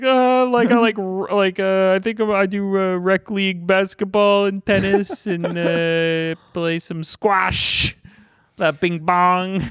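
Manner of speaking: high, silly, dopey put-on voice with stretched-out uh. Recalling an interview answer about athletics, speaking in a silly voice. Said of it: "so I did a silly voice".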